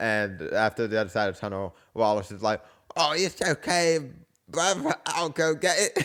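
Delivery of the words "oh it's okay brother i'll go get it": bad, wonky English accent, pitched up. Retelling a Wallace and Gromit scene, Wallace talks to Gromit; bad English accent as Wallace. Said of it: "work on your English accent".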